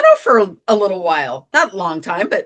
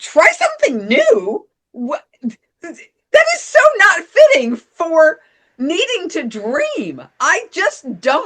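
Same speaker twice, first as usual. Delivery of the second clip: put-on little temper tantrum, annoyed, higher; 10 semitones higher than usual. Retelling walking through the house after being triggered: retelling own little temper tantrum. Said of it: "the energy behind my movement was like a, like a little temper".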